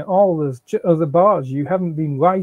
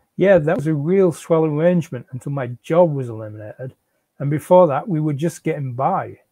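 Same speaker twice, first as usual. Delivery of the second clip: plain reading voice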